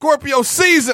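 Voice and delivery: shrill, spontaneous, high, loud shout. Calling out a birthday season on the spot: yelling. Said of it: "I just felt like yelling that".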